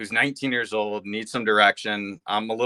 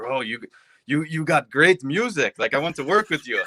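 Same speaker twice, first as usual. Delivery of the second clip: put-on small, light French accent, pitched up; 5 semitones higher than usual. Speaker retells a producer reaching out on Instagram: little French voice. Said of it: "He's talking in his little French voice".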